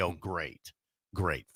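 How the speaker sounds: sarcastic, falsely pleased, fake enthusiastic tone. Acting out a Nebraska fan's reaction to a coaching hire: put-on sarcastic tone. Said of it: "I'm being sarcastic".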